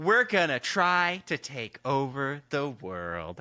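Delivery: sweet, friendly, cheerful, happy, sing-song and slow. Demonstrating the delivery of a line: happy, nice voice. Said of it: "I'm saying it in such a happy, nice voice".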